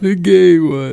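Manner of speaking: acted tearful sobbing in a high, fake crying voice. Retelling a school skit line, acting out crying. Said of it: "I had to act out crying".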